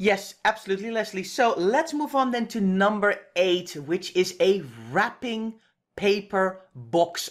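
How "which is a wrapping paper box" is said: slow, careful, deliberate word-by-word enunciation. Presenting list item eight, a tongue twister, speaking slowly. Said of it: "I'm saying this slowly".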